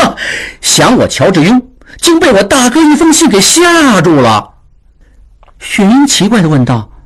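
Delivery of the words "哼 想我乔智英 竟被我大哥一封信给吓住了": hearty laugh, higher. A character slams a paper onto the table and speaks, laughing heartily. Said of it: "哈哈大笑道".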